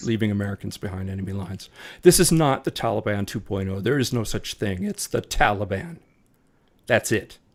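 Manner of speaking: real, unconcealed, genuinely angry outburst. Reacting to what someone did, angry. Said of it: "if you hear anger in my voice, it's real".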